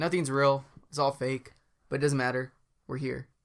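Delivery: ordinary talk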